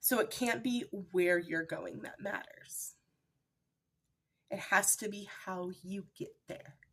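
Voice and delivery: fighting back tears. Reading the closing lines of a book aloud, fighting back tears. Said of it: "Not doing it".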